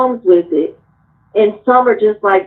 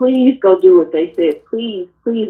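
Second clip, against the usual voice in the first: earnest, imploring, desperate pleading tone. Retelling begging their mother to do what they said: imitating own past pleading. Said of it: "I begged her".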